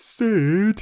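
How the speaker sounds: very loud, high put-on shout on one word. Repeating a one-word Bernard Bresslaw impression on the name Sid. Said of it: "my one-word impression of Bernard Bresslaw, which I'm going to do again".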